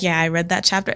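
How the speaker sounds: put-on casual, offhand, nonchalant throwaway delivery. Retelling how someone admitted reading a journal: imitating an offhand remark. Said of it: "just in passing".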